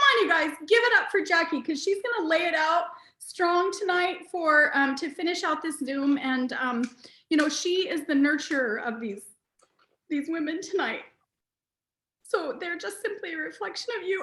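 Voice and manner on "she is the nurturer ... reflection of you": holding back tears, higher pitch. Praising another speaker and her team, holding back tears. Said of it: "I wasn't gonna cry".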